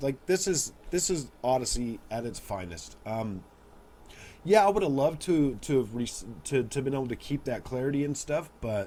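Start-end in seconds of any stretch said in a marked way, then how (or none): none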